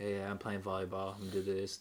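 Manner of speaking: put-on flat monotone. Describing how a player talks when not trying, imitating his monotone voice. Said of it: "he's like very monotone".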